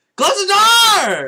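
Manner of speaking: very loud, shrill, full-volume yelling. Recounting a movie scene, imitating a character yelling at people. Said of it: "He's just yelling at people".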